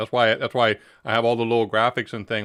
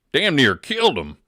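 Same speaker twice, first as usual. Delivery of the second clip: put-on East Texas accent, higher and louder; 5 semitones higher, 5 dB louder than usual. Retelling the punchline of a joke: east texas accent. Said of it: "You gotta say with that East Texas accent".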